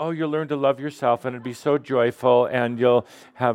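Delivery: ordinary talk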